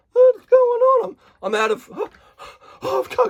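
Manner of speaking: acted, very high, breathless gasping and panting. Mocking a ketogenic person running low on energy, imitating someone out of breath. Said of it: "I've got to catch my breath".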